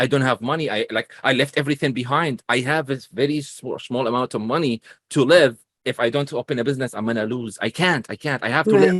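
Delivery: ordinary delivery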